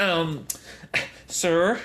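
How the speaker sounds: irritated nerdy voice. Retelling a store clerk blurting out to his brother, in a mock nerdy, annoyed voice. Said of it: "like very nerdy and annoyed".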